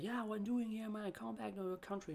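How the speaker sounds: hostile, aggressive taunt. Retelling what an aggressive customer said: imitating an aggressive customer. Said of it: "he was really aggressive".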